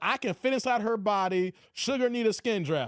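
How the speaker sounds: ordinary talk, nothing marked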